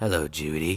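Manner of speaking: put-on masked killer voice. Retelling a movie scene where the killer calls: Scream killer voice. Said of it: "I'm trying a little bit".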